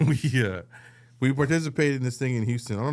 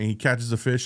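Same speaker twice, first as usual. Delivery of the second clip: usual speaking voice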